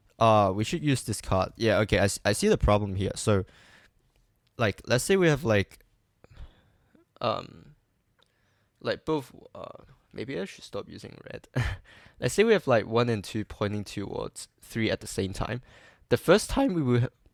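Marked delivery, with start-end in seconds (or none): 16.1-17.1 high, cracking voice. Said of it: "sorry for the voice crack".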